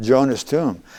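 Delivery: ordinary delivery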